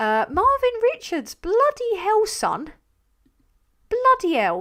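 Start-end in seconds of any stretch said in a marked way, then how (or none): 1.4-4.6 strong, very high, loud, swooping Geordie accent. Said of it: "It's coming out again".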